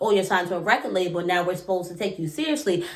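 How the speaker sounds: normal talking voice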